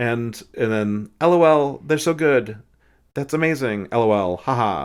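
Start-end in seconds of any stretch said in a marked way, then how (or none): 1.2-4.9 very loud, high-pitched, bone-dry deadpan. Retelling reading friends' texts aloud to the driver: imitating own dry deadpan reading. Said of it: "I read it as dry as humanly possible".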